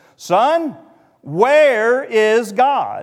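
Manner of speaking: mock stern pastor's boom, very loud. Telling a story, voicing a large pastor questioning a boy, retelling a sterner tone. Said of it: "repeated the question in a little sterner tone".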